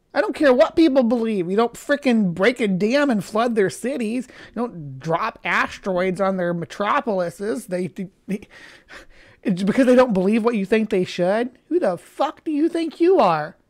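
angry, heated, worked-up indignant outburst. Reacting to what a character just did, the speaker is angry. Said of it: "I'm getting a little bit angry".

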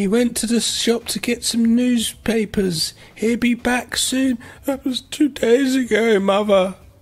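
put-on tearful dramatic tone. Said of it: "a really serious, like, really sad drama".

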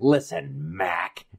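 breathy, whispered cartoon duck voice. Recalling a cartoon and quoting the character: Daffy Duck impression. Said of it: "Daffy Duck is like".

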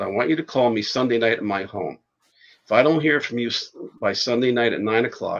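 ordinary talk

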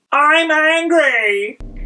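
high, slow, strained mock angry yell, badly acted.

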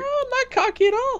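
very high-pitched voice. Denying being cocky while others tease him, in a high-pitched voice. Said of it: "With that high-pitched voice?".

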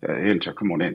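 mock monotone preacher-like voice. Retelling how Flex greeted him at the door: monotone like a preacher. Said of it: "Flex has a real monotone demeanor".

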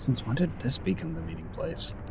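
quiet aside muttered under the breath to himself. Retelling what someone said during a group conversation; muttered under breath. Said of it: "like under his breath".

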